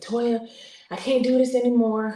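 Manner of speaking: restrained angry outburst. Speaker retells a phone call, quoting the caller: retelling a yell. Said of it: "he's yelling and he's screaming and cursing".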